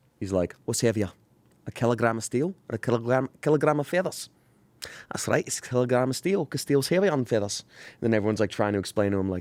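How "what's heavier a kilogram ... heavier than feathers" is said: put-on Scottish accent. Acting out a sketch by a Scottish comedian: Scottish accent. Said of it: "That's a really good accent".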